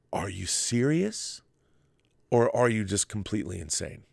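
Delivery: ordinary talk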